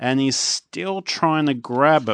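ordinary delivery

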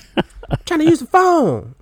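mock yell, very high, swooping and drawn-out. Retelling how mom yelled during internet use: imitating mom yelling. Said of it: "my mom would yell".

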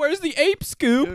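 shrill, very loud, high cartoon voice. Retelling a joke, answering in another put-on voice: Shaggy voice. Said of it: "Shaggy and Scooby's voices".

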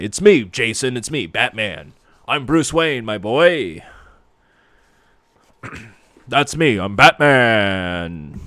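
slow, dark superhero voice, Batman drawn out. Recapping an episode, speaking as Bruce Wayne: Kevin Conroy Batman voice. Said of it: "I'm gonna try and do the Kevin Conroy voice".

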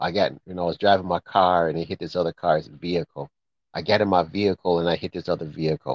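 ordinary talk

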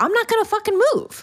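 defiant yell, belted out high and fast.

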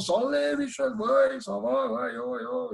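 put-on Swiss German accent on French. Speaker retells a phone call the day after the cup final, Swiss German accent. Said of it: "avec son accent suisse allemand".

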